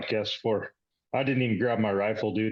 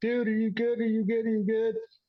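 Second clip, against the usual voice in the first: higher-pitched acted yelling; 13 semitones higher than usual. Retelling yelling to a man through the shot hole under a vehicle; retelling a yell. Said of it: "I'm yelling at him through the shot hole".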